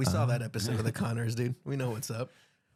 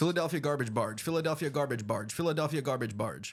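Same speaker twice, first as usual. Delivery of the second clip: rapid, rattling, tongue-twister-like run of repeats. Answering a challenge to say a tongue twister: saying it fast three times. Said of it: "Say that three times fast".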